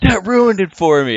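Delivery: put-on high, loud, crushed, whiny childlike voice.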